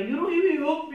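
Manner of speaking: put-on loud, high, baby-like bawling, reproachful crying. Retelling words said to their daughter, retelling crying like a baby. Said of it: "I'm there like crying like a little baby".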